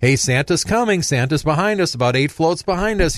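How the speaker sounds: high, loud put-on announcer's call-out yell. Retelling calling out to kids during a parade: imitating own yelling to kids. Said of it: "I yell out to the people and the kids".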